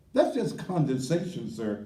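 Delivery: ordinary talk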